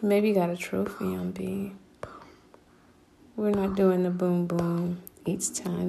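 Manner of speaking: soft, unvoiced whisper.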